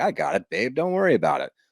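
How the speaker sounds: mock swaggering, chest-puffing boastful voice. Imagining a groom puffing out his chest to his bride: imitating a chest-puffing boast. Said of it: "trying to bump out his chest and be like".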